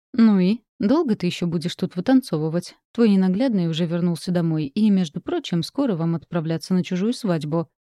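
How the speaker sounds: ordinary delivery, nothing marked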